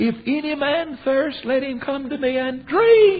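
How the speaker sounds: screaming, high-pitched. Retelling how the carpenter from Nazareth cried out in a quiet moment, screaming. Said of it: "He screamed it".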